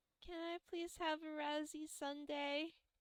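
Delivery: very high, very soft, quiet little voice. A kid asks Jackie after she lists all the ice cream flavors, very quiet. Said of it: "the kid is very quietly like".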